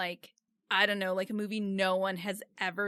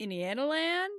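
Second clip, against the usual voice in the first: high-pitched, dazed, spaced-out stoned voice; 6 semitones higher than usual. Retelling a video where a guy answers questions: imitating a stoned guy. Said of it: "so stoned".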